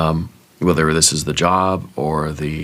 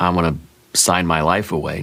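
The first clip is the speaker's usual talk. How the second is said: ordinary delivery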